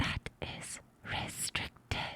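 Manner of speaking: soft, hushed, close-to-the-ear whisper. Speaker acts out a man leaning in to someone's ear, whispering in their ear. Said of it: "he leans in and he whispers in your ear".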